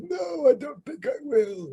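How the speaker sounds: put-on high-pitched voice like a dying old man. Recalling the end of Endgame, the speaker performs the quote in old Captain America voice. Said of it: "In his old man voice".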